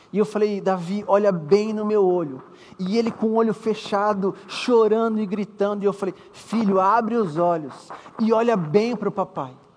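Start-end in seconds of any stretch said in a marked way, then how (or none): none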